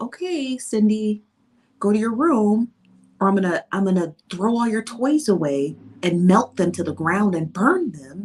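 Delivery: sugary, sweet, gentle, really nice parent tone. Explaining how parents talk to their children, acting out a parent in a mock-nice tone. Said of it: "whether you say it really nicely".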